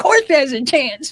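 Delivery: loud, sarcastic retort tone. Retelling a reply to a nurse, imitating past sarcasm. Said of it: "I was really sarcastic back then".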